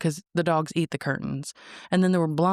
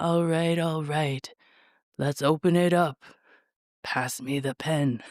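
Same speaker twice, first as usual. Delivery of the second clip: sleepy, barely awake voice. Imagining the president signing a bill in bed: Donald Trump impression, barely awake. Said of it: "That was my best impression".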